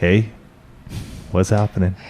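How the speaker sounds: imitated, put-on sexy voice. Speaker acts out his partner coming to bed, mimicking her sexy voice. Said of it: "You get your little sexy voice on".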